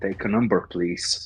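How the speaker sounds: whispered speech. Shaking Death's hand and leaning in to speak: whispering. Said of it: "and I whisper".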